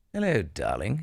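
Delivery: affected, put-on English accent. Joking about picking up an english accent from a spouse: put-on english accent. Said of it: "You just take on an English accent".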